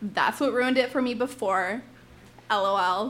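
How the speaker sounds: ordinary delivery, nothing marked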